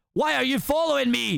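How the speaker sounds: put-on aggressive Scottish accent. Reading a Shrek scene aloud, Shrek's line, in aggressive Scottish accent. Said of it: "one aggressive, like, Scottish accent".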